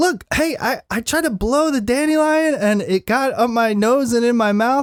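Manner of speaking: put-on very high, worked-up child yelling. Retelling a child calling out to a neighbor: imitating a child yelling. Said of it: "Louis immediately yelling to him".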